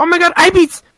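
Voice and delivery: full-on, very loud, shrill, high shriek. Retelling a scary moment in a game from a call: retelling own scream. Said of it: "I was screaming, like".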